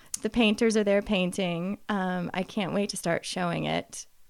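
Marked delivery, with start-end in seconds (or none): none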